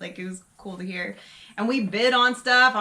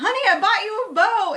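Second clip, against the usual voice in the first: very high-pitched yell, calling out loudly; 11 semitones higher, 4 dB louder than usual. Retelling calling out a purchase in front of nearby tables: imitating a yell. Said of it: "And I just yell out".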